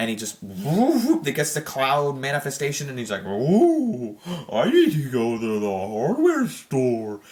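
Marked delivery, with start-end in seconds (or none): 3.2-7.2 very slow, swooping voice with long drawn-out ooh. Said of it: "Kinda sounds like Patrick from SpongeBob".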